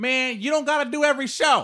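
very high-pitched guy voice. Retelling what a man messaged after a post: imitating a guy's voice. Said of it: "That's his voice".

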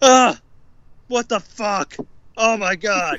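mock slow, high, drawn-out, stunned freaking out. Describing a video of characters in a spaceship, imitating Rick and Morty freaking out. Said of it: "freaking out".

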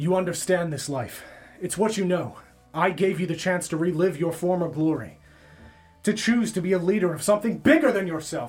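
yelling loudly. Voicing Will mid-swordfight, yelling at a masked figure: yelling. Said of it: "you hear Will yell out".

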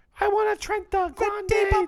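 very high, loud, snooty voice. Mocking fancy coffee size names, the speaker does a Starbucks customer impression. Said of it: "I like our Starbucks impression".

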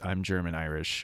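very calm, unperturbed, low, soft voice.

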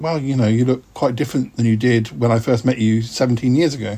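ordinary talk, nothing marked

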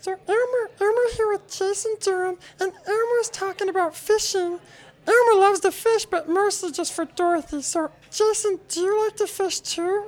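very high, tiny put-on character voice. Doing a voice in a voice-off: Elmo voice. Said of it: "I'm gonna do Elmo".

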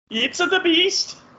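very high-pitched, badly done put-on Indian accent. Recalling an Indian film's preview, the speaker does a terrible fake Indian accent. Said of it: "that's a terrible Indian accent".

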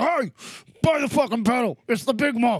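put-on old-style, loud, barking New York tough-guy voice. Act out the maker of the Big Muff selling his pedal, as Mike Matthews, New York tough guy. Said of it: "some old gray-haired tough guy from New York".

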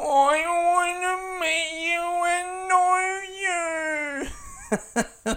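put-on very high, very drawn-out, slow baby talk. Imagining meeting a son for the first time, Fernando baby voice. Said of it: "an imitation of Fernando if he spoke English and was a baby".

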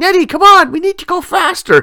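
high-pitched, yelling voice. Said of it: "Maud's yelling at Ned".

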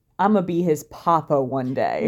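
ordinary talk

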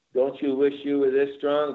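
ordinary talk, nothing marked

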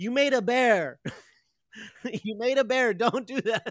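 shrill yell, very high and very loud. Retelling a scene where Spike sees a bear: imitating Spike shouting. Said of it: "Spike shouts".

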